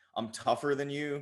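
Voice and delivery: ordinary talk, nothing marked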